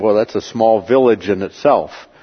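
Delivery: plain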